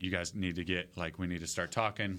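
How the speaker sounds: ordinary talk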